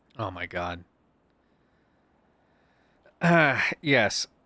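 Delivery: very slow, irritated voice with rising pitch. Reacting while going through texts, irritated. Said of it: "Why do you sound very irritated with me".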